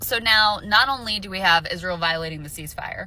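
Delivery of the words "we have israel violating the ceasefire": ordinary talk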